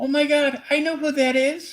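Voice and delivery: put-on, very high-pitched, excited squealing shriek. Retelling a girl running up the stairs, imitating her screaming.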